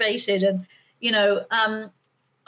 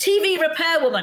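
loud yell, much higher pitch; 6 semitones higher than usual. Telling a story, the speaker acts out a woman at a door, retelling a yell. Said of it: "And she yells".

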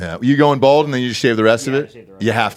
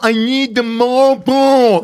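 very high, exaggerated, drawn-out fake voice; 13 semitones higher, 4 dB louder than usual. Showing how they ask for Marlboros, drawn-out, stretched words. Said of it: "I will stretch it the fuck out".

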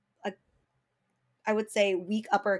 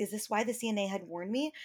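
ordinary talk

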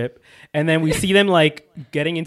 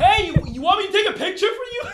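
mock, very high, aggressive screaming. Recalling flinging her door open and calling out to others; retelling a scream. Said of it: "screamed out".

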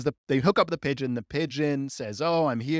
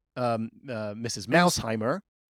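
usual speaking voice

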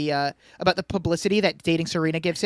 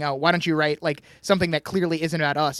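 ordinary talk

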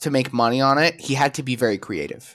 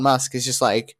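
plain

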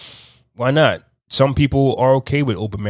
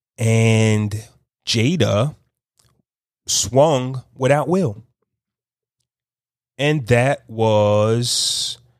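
very slow, drawn-out talk. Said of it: "I'm talking slow".

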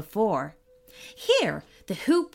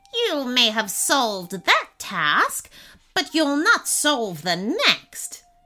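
enraged, raging tiny trickster imp voice; 2 semitones higher than usual. A narrator reads the imp's retort after the boy solves his task, furious imp. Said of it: "The boy looked down to see a tiny blue imp rubbing his hands together. / The boy looked down to see a tiny blue imp rubbing his hands together. / chuckled the imp. / Unless you can complete my three t".

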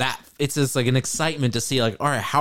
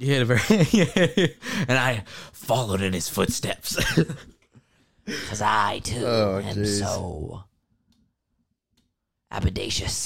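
put-on heavy smoker voice, lower pitch; 5 semitones lower than usual. Describing his father, who smoked heavily, imitating a heavy smoker's voice. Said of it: "That's why he kind of sounded like this".

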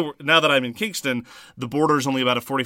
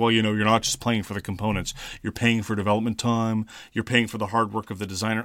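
put-on very, very condescending, holier-than-thou tone; 3 semitones lower, 3 dB quieter than usual. Mimicking people who march in acting holier than thou, mock-condescending. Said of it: "very, very condescendingly".

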